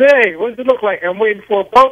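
high, sudden yelled call-out. Retelling confronting a man who cut in line at a hotel: imitating his own yell. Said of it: "So I yelled at him".

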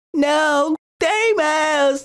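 lightest possible voice, very high. Speaker claiming the lightest voice in the group tries the line, light voice. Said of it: "I have the lightest voice in the group".

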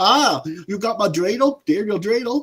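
put-on German accent. Complaining about a movie, imitating a character who talks German, in a put-on German accent. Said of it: "the one dude was talking like he was German".

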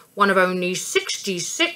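plain

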